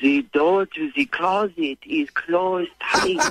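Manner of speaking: put-on French accent. Speaking on the phone after being asked for one: French accent. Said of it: "speak to me in a French accent right now".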